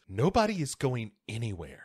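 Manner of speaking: put-on menacing tone, swooping and ominous. Retelling a movie scene line spoken by the husband: put-on ominous tone. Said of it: "Very ominously".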